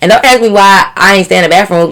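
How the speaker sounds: ordinary delivery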